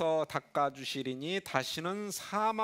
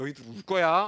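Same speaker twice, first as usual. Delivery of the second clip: loud, intimidating, menacing scolding tone, acted out; 2 semitones lower, 5 dB louder than usual. Acting out a stern rebuke of laughing listeners: imitating an intimidating rebuke. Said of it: "이렇게 위압하는 예수님".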